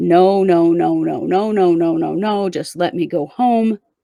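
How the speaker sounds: ordinary talk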